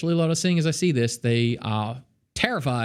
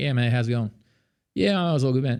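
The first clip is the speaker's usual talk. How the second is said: lazy, slurred, mumbled Australian accent, words run together. Showing how Australians articulate words badly, in a mumbled Australian accent. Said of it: "Australians are notorious, so bad at articulating words like".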